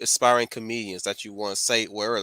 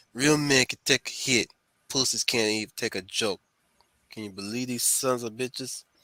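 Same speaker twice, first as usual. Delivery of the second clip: tough-guy, mobster-style mob boss voice. Trying the line the way a mob boss would say it, in a mob boss voice. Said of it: "let me do it mob mob style then".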